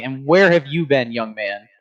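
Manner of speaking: strict, reproachful, stern father voice. Voicing Triton as a parent who caught his kids out late: stern father voice. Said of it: "like a stern father".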